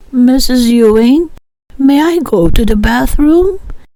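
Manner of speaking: cloyingly sugary, overly polite, sickly sweet tone. Narrating a story, a boy asks his teacher to leave class, in a sickly sweet voice. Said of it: "he asked in a sickly sweet voice".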